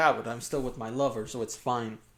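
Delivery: ordinary talk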